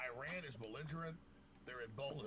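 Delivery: ordinary talk, nothing marked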